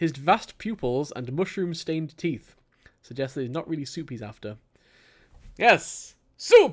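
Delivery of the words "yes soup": shrill, shrieking character voice, very high and loud. Reading aloud, voicing a character who wants soup, doing the soup-seeker's voice. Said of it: "I've got to do the voices".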